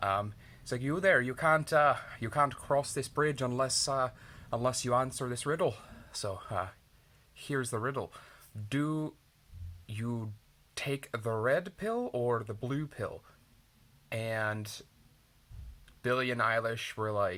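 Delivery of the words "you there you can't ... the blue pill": put-on Irish accent. Telling a story where a snake stops two travelers at a bridge, Irish snake accent. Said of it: "I know how Irish Irish accent goes".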